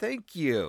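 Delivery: grudging, spoken through gritted, clenched teeth. Retelling thanking a police officer who paid for the meal, through gritted teeth. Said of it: "through gritted teeth".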